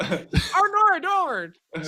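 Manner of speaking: put-on Australian accent. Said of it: "that's my Australian accent".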